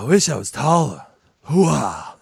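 over-the-top, slow, drawn out, wildly swooping pitch. Doing a requested impression on the spot: Al Pacino voice. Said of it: "That was a damn good impression".

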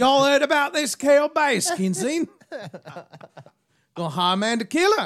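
fake Southern accent drifting Australian. Trying a Southern voice on a tiger story: Southern accent fading Australian. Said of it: "I always fade to Australian".

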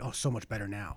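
hushed voice. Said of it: "whisper it".

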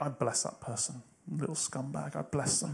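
very quiet, hushed, snide, dripping sarcastic tone. Describing the way people bless someone, acting out a sarcastic blessing. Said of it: "done the sarcastic thing of like".

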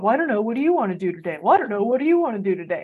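sing-song cartoon character voice. Explaining indecisive people, acting out a scene from SpongeBob in the cartoon voice. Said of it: "when I use that voice".

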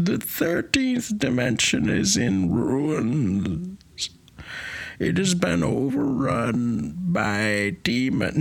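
high, slow, otherworldly character voice. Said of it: "you can't do Coswald".

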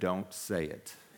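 acted firm, no-nonsense, stern, serious tone. Retelling a warning from Carolyn: imitating a stern warning. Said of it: "she looked at me very sternly".

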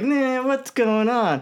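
very high, light, unmenacing tone, said slowly. Comparing how the animated show voiced the two sides: Bruce Wayne voice. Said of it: "'Cause Bruce Wayne was like".

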